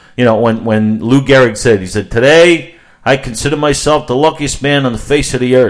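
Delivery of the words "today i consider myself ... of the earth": put-on thick New York accent, pitched up. Retelling Lou Gehrig's famous speech: Lou Gehrig with thick New York accent. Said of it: "that's what he sounded like".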